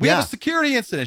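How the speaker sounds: very high, shrill, screaming shout. Retelling running into the train rooms past the staff, retelling yelling and screaming. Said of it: "And I'm yelling and screaming".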